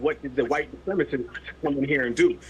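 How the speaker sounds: usual speaking voice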